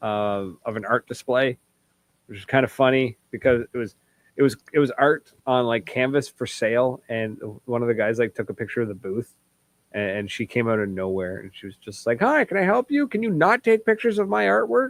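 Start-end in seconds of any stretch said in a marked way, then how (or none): 12.2-14.9 imitated angry screaming yell, higher. Retelling how a woman stopped someone photographing her artwork: imitating someone screaming angrily. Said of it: "came screaming at".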